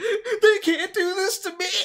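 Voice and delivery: whiny, very high, cracking cry-scream. Mocking Richard Spencer's voice on a leaked speech, imitating Richard Spencer cry-screaming. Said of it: "cry screaming like".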